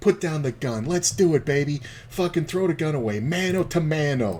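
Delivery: high, overemphatic tough-sounding voice stressing every word. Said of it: "keeps, like, overemphasizing all this shit".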